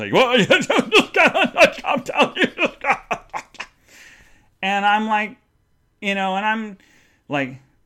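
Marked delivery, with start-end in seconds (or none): 0.1-3.2 laughing mid-sentence, higher and louder. Retelling Dad's advice to calm down: imitating Dad laughing while talking. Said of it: "laughing through this".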